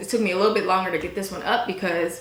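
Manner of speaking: rushed, fast, excited chatter rattled off.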